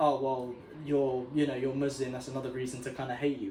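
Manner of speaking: ordinary delivery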